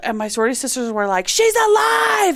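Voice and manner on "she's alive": put-on yell, higher, louder. Retelling how sorority sisters reacted when she woke up: imitating friends yelling. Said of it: "They start yelling".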